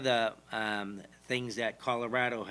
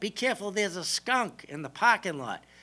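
very high, mock shouted yelling; 10 semitones higher than usual. Retelling how the speaker's mother called out about a skunk smell, retelling a yell. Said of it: "just kind of yelled out".

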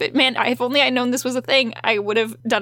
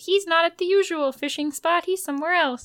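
higher, firm, pitched-up voice; 5 semitones higher, 4 dB quieter than usual. Recapping a scene for listeners, speaking Bella's lines in Bella voice. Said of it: "So that's my Bella voice".

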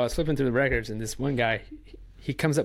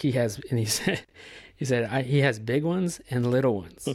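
usual speaking voice

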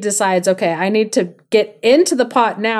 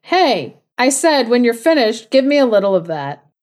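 calling out loudly; 2 semitones higher than usual. Retelling a folk tale, the hidden man calls again: calling out loudly. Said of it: "calls out again".

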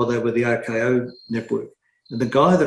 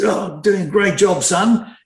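rough, husky voice, a touch higher and louder; 8 semitones higher, 5 dB louder than usual. Retelling a phone call he was put on, doing Sir Frank Packer's husky voice. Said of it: "in his husky voice".

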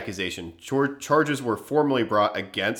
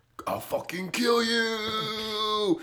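mock furious ghostly voice, higher and quieter; 9 semitones higher, 7 dB quieter than usual. Acting out a ghost of a living neighbor for a joke: put-on angry ghost of a neighbor. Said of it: "And that ghost would be like".

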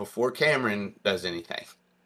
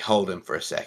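plain

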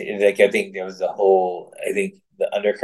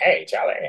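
slowed-down, deep, detuned, recording-like voice; 3 dB quieter than usual. Imitating a recorded YouTube reading that was slowed down: imitating a slowed-down, down-tuned voice. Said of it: "That's how he sounded".

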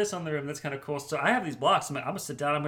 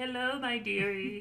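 put-on old-lady voice, higher pitch; 6 semitones higher, 5 dB quieter than usual. Describing a bearded man trying a grandma voice, in a grandma voice. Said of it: "kind of grandma voice".

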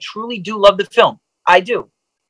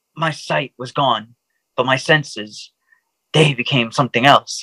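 deadpan narrator delivery, much lower pitch; 7 semitones lower than usual. Mocking a film montage, quoting its voiceover as Ben Affleck deadpan narration. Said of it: "Ben Affleck's deadpan narration".

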